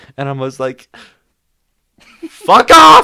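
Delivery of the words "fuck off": top-of-lungs shriek, very high, very loud, shrill. Recounting your reply to a man talking to Michael, re-creating a top-of-lungs scream. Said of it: "I screamed fuck off at the top of my lungs".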